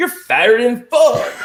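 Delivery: put-on loud, high-pitched Southern accent. Retelling a voice heard while standing on a scale: Southern accent. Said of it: "with a Southern accent".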